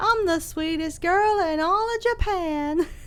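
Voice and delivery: put-on country accent. Giving a doll character a voice, in a country girl accent. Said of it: "Why give her the accent?".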